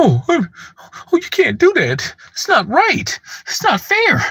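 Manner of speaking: mock emotional whine. Mocking critics again by imitating them: mocking emotional whine imitating critics. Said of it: "So who being emotional now?".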